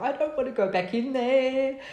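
mock, high, tearful, weeping, crying voice. Recalling going out to the car on a lunch break, imitating own past crying. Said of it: "I went out to my car crying".

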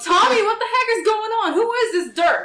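shrill high-pitched yelling. Asking in character what is going on and who someone is: yelling in character. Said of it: "I yell".

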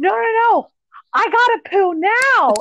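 put-on very high, insistent, shouted yell. Recalling being a child on the starting block, retelling a yell to mom. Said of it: "I'm like yelling to her across".

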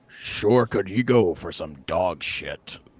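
very low, dropped voice. On request, speaker reads the dog's first line in Optimus voice. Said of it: "The dog's first line in Optimus's voice".

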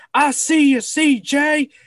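very loud, high, hyped-up sports dad voice. Retelling how a player's dad stood all game at every kickoff, imitating a hyped-up dad. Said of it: "just getting all hyped up".

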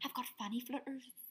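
soft, murmured, badly done Irish accent.

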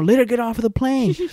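acted-out, high-pitched scream, screaming the line. Retelling how a man on a phone call screamed, acting out a scream. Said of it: "he's just screaming".

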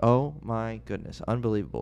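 ordinary talk

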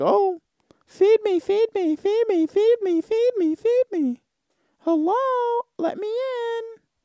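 very high, pestering, annoying talking-cat voice. Imagining the cat could speak English: imitating an annoying talking cat. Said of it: "The cat might be fucking annoying".

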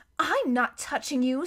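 plain reading voice

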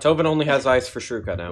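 ordinary talk

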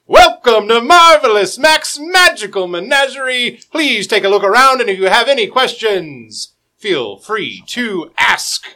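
very loud, high, booming announcer-like voice. As the players open a door, the narrator voices an unseen greeter, loud booming voice. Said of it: "you hear a loud booming voice".

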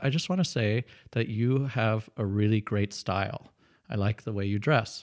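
normal talking voice

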